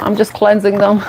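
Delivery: ordinary talk, nothing marked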